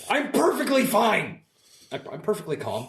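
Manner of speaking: not calm, agitated. Insisting to the others that all is fine: not calm despite the words. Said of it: "Your tone of voice says different".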